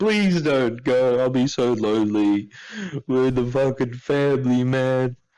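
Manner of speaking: slow, sobbing, tearful pleading voice. Retelling a character's plea to stay: imitating crying and pleading. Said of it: "he starts crying and begging and pleading".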